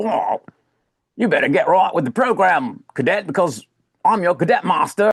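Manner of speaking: put-on British rogue accent. Complaining about how a woman in a role speaks, imitating her British pub rogue voice. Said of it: "why does she speak like a British rogue character from like a pub".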